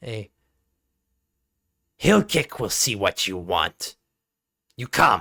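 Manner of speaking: low, growly, snarled goblin creature voice. A game master voices a goblin speaking to the players, snarling goblin voice. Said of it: "just kind of snarls out".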